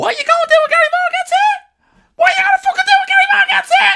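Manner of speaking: very high, very loud, tiny squeaky voice. Retelling an overheard confrontation, doing Gary's tiny squeaky voice. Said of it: "this tiny little squeaky voice".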